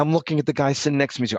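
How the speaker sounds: ordinary talk, nothing marked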